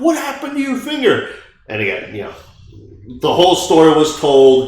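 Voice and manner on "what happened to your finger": put-on screaming mother voice, pitched very high. Retelling what a kid's mom screamed about his finger, retelling a mom's scream. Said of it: "she was screaming like".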